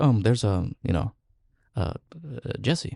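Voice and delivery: soft, halting voice, hesitating quietly between words. You show how he recalls everyone's name on a big set, with a micro Jeff Goldblum impression. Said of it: "We got some impression right there".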